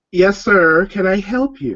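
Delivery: high-pitched, slow, haughty elven dandy shopkeeper drawl. Voicing an elven dandy in a clothing shop greeting a customer: elven dandy shopkeeper voice. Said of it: "and then he calls out".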